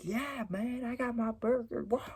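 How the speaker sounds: very high, shrill, pumped-up, ecstatic yell. Retelling a man celebrating his burger, imitating a man screaming. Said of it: "he's screaming, he's yelling".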